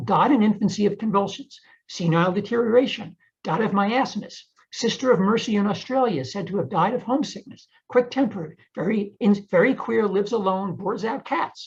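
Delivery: plain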